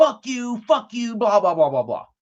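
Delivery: acted-out rowdy hooting, high hollering scream. Retelling what a teenage boy outside was yelling: imitating someone screaming. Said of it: "a teenage boy screaming, hooting and hollering".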